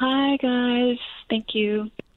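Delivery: downcast, sad, bummed-sounding voice. A caller greets the show hosts after being welcomed, sounding bummed. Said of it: "she sounds so bummed".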